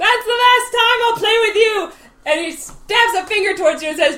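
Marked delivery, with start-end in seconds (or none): 0.0-1.9 furious, high, loud angry screaming outburst. Voicing a character who flips the table, screaming in character. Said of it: "And starts screaming".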